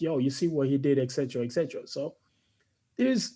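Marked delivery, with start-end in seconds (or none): none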